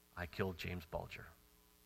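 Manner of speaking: very quiet soft speech. Retelling a ten-year-old boy's confession to the police, in a very soft voice. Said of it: "in a very soft voice".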